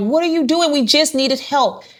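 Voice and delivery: reenacted yelling and screaming. Recalling officers handcuffing her mom, the speaker reenacts yelling and screaming at them. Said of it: "I'm yelling and screaming like".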